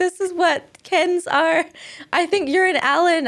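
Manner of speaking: yelling, pitched high. Retelling running home to dad after the movie, imitating own past yell. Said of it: "I'm yelling at my dad".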